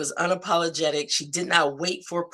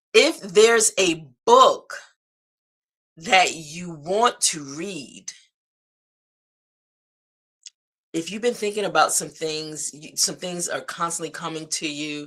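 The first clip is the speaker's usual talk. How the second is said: measured, unhurried, a little slower, deliberate delivery; 3 dB louder than usual. Addressing listeners and wanting them to take this in, a little slower. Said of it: "I'm going to say it a little slower".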